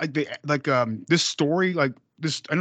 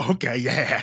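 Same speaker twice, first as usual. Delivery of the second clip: put-on super excited voice. Retelling a movie scene where someone agrees to burn the body: imitating a super excited character. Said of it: "super excited about it".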